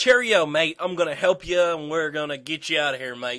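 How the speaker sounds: loud, friendly, put-on Australian outback accent. Retelling a story, voice the outback guy who offers help: put-on Australian accent. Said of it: "An Australian".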